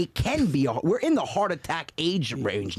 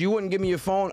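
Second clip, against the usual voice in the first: ordinary talk, nothing marked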